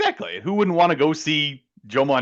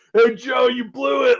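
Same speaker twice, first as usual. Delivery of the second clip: put-on very high, drawn-out, drunken shouting; 10 semitones higher than usual. Retelling drunk guys behind us leaving a game: imitating drunk guys yelling. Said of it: "yelling at me".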